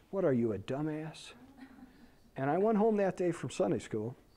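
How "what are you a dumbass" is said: taunting, half-whispered stage whisper meant to carry. Retelling a kid's taunt in Sunday school class: imitating a half-whisper. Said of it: "said in a whispering voice".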